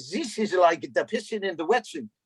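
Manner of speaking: put-on Hungarian accent. Acting out George addressing everybody crowded around at the sideline, in George's Hungarian accent. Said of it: "in his Hungarian accent".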